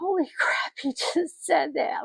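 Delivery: put-on breathy, tearful whispered outburst, crying whisper. Retelling breaking down in a parking lot after bad news: retelling crying. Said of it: "I just busted out crying, going".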